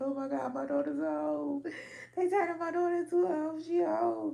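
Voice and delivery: mock very high, loud sobbing wail. Acting out a mother sobbing over her daughter: imitating a mother sobbing. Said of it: "your mama sobbing like".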